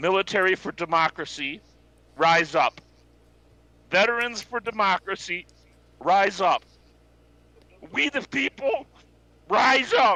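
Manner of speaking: emotional, heartfelt, impassioned, rising. Rallying listeners to stand together, speak impassioned and full of emotion. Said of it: "I can hear the emotion in your voice".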